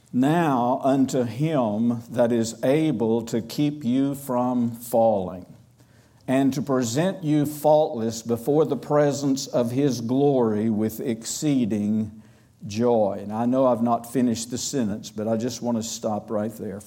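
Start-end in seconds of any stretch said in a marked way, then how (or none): 0.1-13.2 very slow, unhurried reading with "him" drawn out. Speaker reads verse 24 of Jude aloud for listeners to digest: reading slowly. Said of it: "I'm going to read it slowly".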